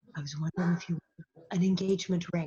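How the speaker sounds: soft, hushed, close-to-the-mic near-half-whisper. Retelling a line read aloud on the mic: imitating Dean Butler half-whispering. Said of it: "he's practically whispering out".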